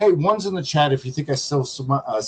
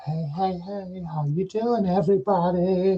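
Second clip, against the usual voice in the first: sarcastic mocking voice, drawn out and pitched high; 6 semitones higher, 4 dB quieter than usual. Mocking how another streamer greets viewers: mocking imitation of Carrie. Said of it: "And Carrie's like".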